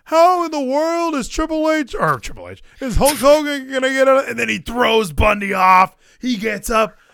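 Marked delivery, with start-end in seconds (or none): 0.1-4.2 high, incredulous announcer voice. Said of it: "Gorilla Monsoon is like".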